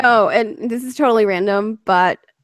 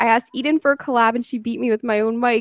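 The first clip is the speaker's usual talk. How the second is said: ordinary talk, nothing marked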